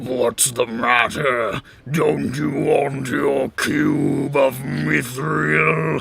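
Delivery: low mocking sneer with cube drawn out. Voicing a figure who watches the party run away, sneering at them. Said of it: "he sneers at you".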